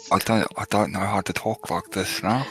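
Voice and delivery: speech impediment, impeded speech. Having just grown tusks, a character struggles to talk, with a speech impediment. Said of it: "you have like a speech impediment now".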